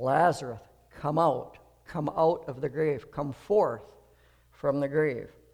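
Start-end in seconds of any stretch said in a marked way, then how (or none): none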